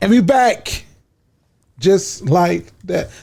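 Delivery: slightly shaky, wavering, unsteady, wobbly voice. Coming back from a break, a little shaky. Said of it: "I sounded a little shaky when I said that".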